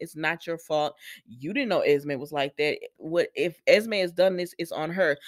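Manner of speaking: normal talking voice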